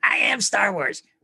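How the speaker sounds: poorly done cartoon voice, dragged out. Joking about Star Wars with a bad Ralph Wiggum impersonation. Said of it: "my bad whatever dude from Simpsons impersonation".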